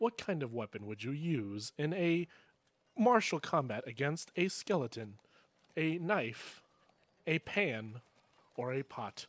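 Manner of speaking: small, slow robotic voice. A game master voices a little robot polling townsfolk, in little survey robot voice. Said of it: "You just see little robots. / Thank you for answering this survey on undead uprisings".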